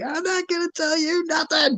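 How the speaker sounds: acted-out, very high, terrified shrieking scream. Retelling a torture scene from the game, imitating a terrified scream. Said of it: "the guy screaming in terror as he's like".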